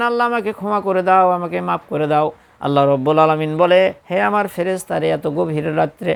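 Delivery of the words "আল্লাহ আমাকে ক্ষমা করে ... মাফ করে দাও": ordinary talk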